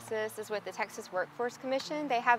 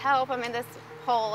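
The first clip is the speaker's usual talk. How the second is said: ordinary talk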